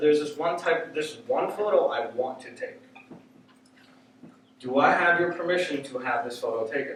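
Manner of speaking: plain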